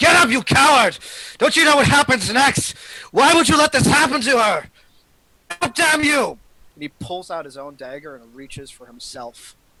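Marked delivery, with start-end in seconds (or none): 0.0-6.4 very loud, very high, furious, shrill screaming. Narrating a scene, the character turns on his younger self, screaming. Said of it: "He goes towards the young Eridu and screams".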